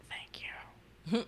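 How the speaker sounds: hushed, breathy whisper under the breath. Voicing a character at one hit point thanking the healer: whispering.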